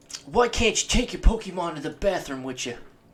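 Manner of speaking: put-on Boston accent. Telling the other speaker a joke: Boston accent. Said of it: "What's with the accent?".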